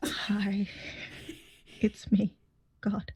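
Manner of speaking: very slow, fretful, worried delivery. Speaking as God to the players: worried God voice. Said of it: "Why does God sound so worried?".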